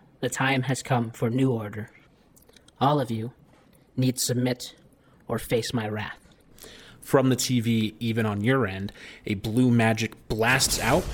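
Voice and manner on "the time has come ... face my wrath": robotic, machine-like computer voice. A face forms on a TV screen and addresses everyone, robotic voice. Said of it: "as a robotic voice speaks".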